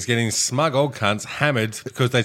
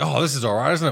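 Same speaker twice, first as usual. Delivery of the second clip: mocking smug old person voice; 3 semitones higher than usual. Retelling an older customer tasting a strong lager: imitating a smug old customer. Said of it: "They're like".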